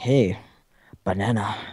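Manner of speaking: put-on Japanese accent, a best effort. Mimicking people in a pre-recorded E3 segment, put-on Japanese accent. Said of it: "that's my best Japanese accent".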